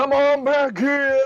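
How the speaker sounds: loud booming shout. A game master voices a character who turns himself into a megaphone, booming. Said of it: "his booming voice will just go".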